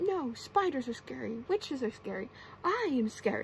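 ordinary delivery

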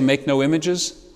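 plain

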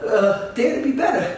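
high-pitched mock celebrity voice, bro-style. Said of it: "And he's like".

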